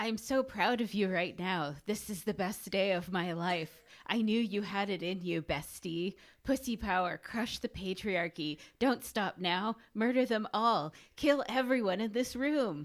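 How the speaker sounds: snake character voice. [name] reads out the snake's full quote in Nyx snake voice. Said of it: "Now it is [name]'s turn in snake voice".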